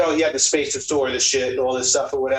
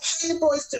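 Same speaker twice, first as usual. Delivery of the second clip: put-on nasty, very high, soft, thick Italian lady accent; 4 dB quieter than usual. Describing how a man's wife used to greet the boys, imitating her thick Italian woman accent. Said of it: "this nasty, thick, fat woman Italian accent".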